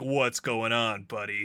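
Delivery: deep, beefy, buff gym-bro voice. Trying out voices for a game character, speaker does a buff gym dude voice. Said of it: "like a buff dude at the gym".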